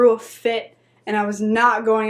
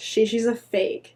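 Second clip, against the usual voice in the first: normal talking voice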